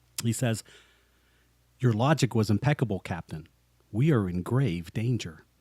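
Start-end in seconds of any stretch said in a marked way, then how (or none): 1.8-5.3 flat, level, low, emotionless monotone. Retelling a scene, quoting Spock speaking to the captain, flat, unemotional Spock voice. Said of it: "Spock says so flatly and so unemotional".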